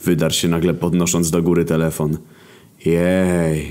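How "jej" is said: sarcastic, joyless, deadpan, unenthusiastic cheer. The remaining group answers a man excited about getting phone signal, unenthusiastic cheer. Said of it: "z entuzjazmem godnym rezydentów Oświęcimia".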